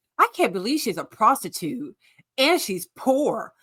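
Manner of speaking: snobby, sniffy, looking-down, disbelieving tone. Mocking how a man on a show sounded: imitating a snobbish remark. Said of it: "He said that like she was a prostitute who was poor".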